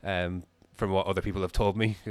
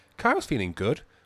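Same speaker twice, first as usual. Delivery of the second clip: voice cracking on the word "good"; 4 semitones higher, 4 dB louder than usual. Commentating the start of a race, voice crack. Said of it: "that was a was a terrible voice crack".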